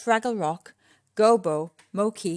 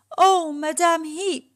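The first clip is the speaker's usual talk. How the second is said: out of breath, panting, pitched up; 7 semitones higher, 3 dB louder than usual. Narrator reads Boober calling to Madame Heap after bolting to the trash heap, panting. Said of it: "panted Boober".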